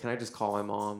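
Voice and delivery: ordinary talk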